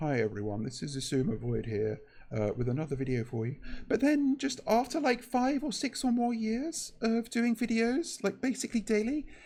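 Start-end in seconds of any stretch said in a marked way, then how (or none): 0.0-3.6 very low, low-energy delivery. Imitating how a YouTuber sounded in older videos: imitating Isumovoid's early low-energy voice. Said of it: "he sounded very much like".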